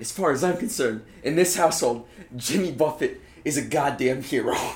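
gangster-style tough voice. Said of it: "do a good Tony Soprano impression".

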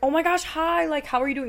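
gushing, up an octave. Greeting someone who comes into your business, high, excited voice. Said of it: "you raise an octave. When you're excited and stuff, your octave always raises".

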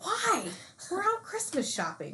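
incredulous tone.

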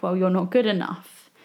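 normal talking voice

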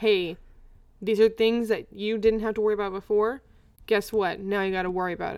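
ordinary delivery

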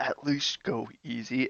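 quiet, hushed, low-key aside. In a tabletop game, a player's character speaks to a companion heading for the statue: low voice. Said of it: "in a low voice".

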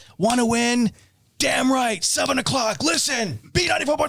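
punchy, clipped delivery, hard-hit words in short bursts. Showing how to use just four or five words, punching short words. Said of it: "you would just use like 4 or 5 words and punch the words".

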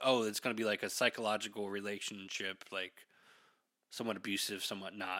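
plain

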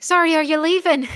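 very loud, high-pitched, pressing, urgent voice. The narrator voices someone calling from a corner as the players leave: urgent voice. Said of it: "you hear an urgent voice from the corner".

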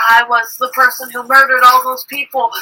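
ordinary talk

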